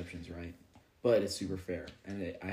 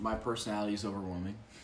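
normal talking voice

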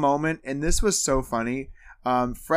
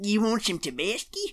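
put-on old prospector voice; 6 semitones higher, 4 dB quieter than usual. Talking about Tabasco, slipping into an old prospector voice. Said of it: "I don't know why that did an old prospector voice".

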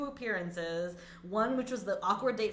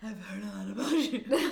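put-on breathy voice with a speech impediment. Repeating a character's line from a clip: imitating Ronald's winded speech. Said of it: "why are you winded?".

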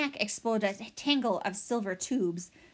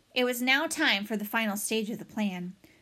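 ordinary delivery

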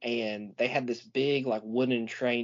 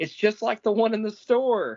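mock thrilled child's shout, very high and excited; 11 semitones higher, 3 dB louder than usual. Retelling coming down the stairs to a christmas train table: imitating own childhood yell. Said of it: "I yelled".

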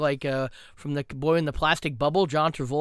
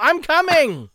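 shrill, very high, loud yell; 12 semitones higher, 7 dB louder than usual. Showing how to get out of a Zoom meeting: yelling. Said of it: "Just yell".

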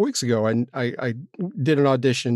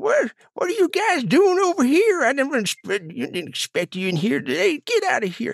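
put-on old southern man voice, much higher, slower; 14 semitones higher than usual. Speaker recreates his second recording take for them, in an old southern man voice. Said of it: "I heard it in my head as an old Southern man".

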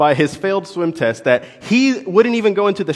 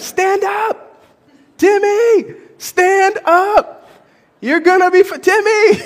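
mock very high, very slow, drawn-out screaming; 4 dB louder than usual. Retelling how the adults screamed at a panicking child in a pool: imitating screaming at a child. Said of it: "we're screaming at him".

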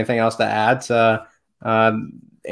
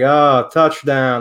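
put-on, mock flat monotone voice; 3 semitones higher, 4 dB louder than usual. Describing a sketch where brainwashed guys watch football, imitating brainwashed monotone. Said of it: "Like just all like very monotone".

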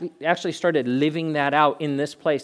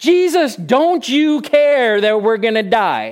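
put-on frantic shout of terror, very loud, high, panicked; 8 semitones higher, 8 dB louder than usual. Retelling the disciples in the storm freaking out: imitating disciples freaking out. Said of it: "They're freaking out".

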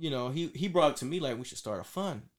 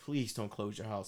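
put-on desperate pleading, lower; 4 semitones lower, 4 dB quieter than usual. Retelling what the social worker said when they called: imitating a desperate plea.

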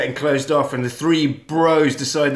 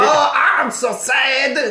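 put-on French accent, very high, very slow; 11 semitones higher than usual. Pitching a scene, voicing the sad french lady in a put-on french accent. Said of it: "Doing an amazing French accent".

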